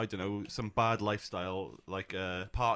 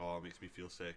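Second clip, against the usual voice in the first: mock flat emotionless monotone, much quieter; 3 semitones lower, 11 dB quieter than usual. Retelling a woman's reaction to a salad, imitating a flat emotionless voice. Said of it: "not even any emotion in her voice".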